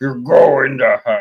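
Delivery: loud, booming, hellish demon voice. Showing how the line sounds past age twelve, in a demon voice. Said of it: "like a demon voice".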